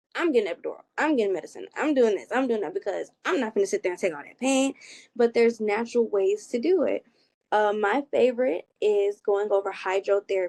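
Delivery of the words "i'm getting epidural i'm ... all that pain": fast, firm, stern, no-nonsense insistent delivery. Imitating women who insist on medicine during labor, mock-stern insistence. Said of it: "they be so stern on".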